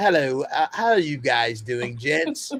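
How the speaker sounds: loud, bad, mock British accent.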